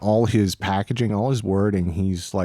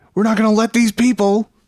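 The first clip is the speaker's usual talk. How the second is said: loud, high-pitched rousing shout; 13 semitones higher, 6 dB louder than usual. Imitating a prime minister's rabble-rousing speech: Justin Trudeau's rabble-rouse voice. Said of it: "I like his, uh, rabble-rouse voice".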